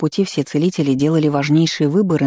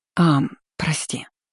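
embarrassed, sheepish whisper, quieter; 4 dB quieter than usual. A woman apologizes after her mentor asks if she is all right, embarrassed whisper. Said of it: "смущенно прошептала".

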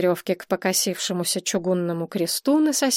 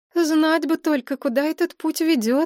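skeptical, uncertain, pitched-up doubtful musing; 7 semitones higher than usual. Maria answers Nadezhda at an underground stairway, doubtful. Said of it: "с сомнением в голосе ответила".

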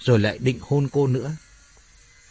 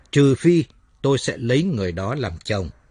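usual speaking voice

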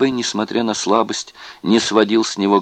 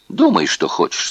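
plain

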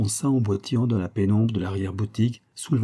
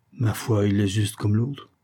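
usual speaking voice

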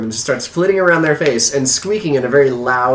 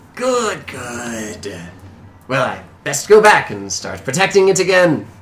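put-on wheezy old man character voice. Narrating a game scene, the speaker voices old man Yord, wheezy old-man voice. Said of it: "in his wheezy voice".

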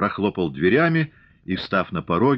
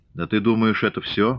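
plain reading voice

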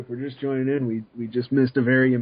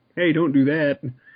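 ordinary talk, nothing marked

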